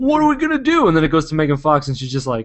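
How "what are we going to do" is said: very high, hammy, over-the-top goofy overacting. Describing everybody overacting before it goes to Megan Fox, mock-goofy overacting. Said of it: "goofy and being like".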